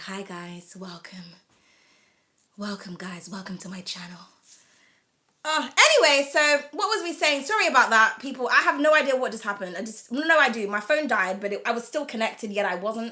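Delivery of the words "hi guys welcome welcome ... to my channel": very low, deep, sultry put-on sexy voice. Showing the sexy voice the speaker wishes for, greeting viewers: put-on sexy voice. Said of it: "I wish I had a sexy voice like this".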